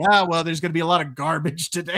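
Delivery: breezy, nonchalant, offhand throwaway delivery. Retelling a movie scene where a girl falls: imitating Willy Wonka's nonchalant tone. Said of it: "so nonchalant about everything".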